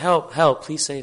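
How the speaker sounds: usual speaking voice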